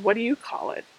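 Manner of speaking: really sarcastic, pointed delivery. Asking viewers a question about their own terms: sarcastic. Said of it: "that came out really sarcastic".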